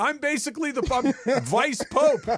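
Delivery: pretend screaming at full volume. Imagining being picked up at a ballgame, pretend screaming at top of lungs. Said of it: "I'm gonna be screaming at the top of my lungs".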